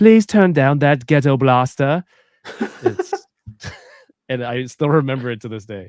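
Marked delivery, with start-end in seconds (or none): 0.0-2.0 put-on loud, precise, highly articulated British accent. Recalling what a gym teacher with a british accent used to say, in a british accent. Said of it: "the lady with a British accent".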